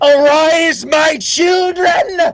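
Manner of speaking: very high, shrill shouted villain voice. Voicing a spellcaster who looks up at the ceiling: villain shouting. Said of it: "so he shouts that".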